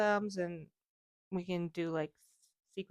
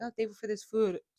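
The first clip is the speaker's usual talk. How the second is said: normal talking voice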